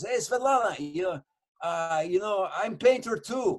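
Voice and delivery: put-on Russian-accented English. Retelling what a man said to svetlana while eating, imitating a russian accent. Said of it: "he's talking like this to me".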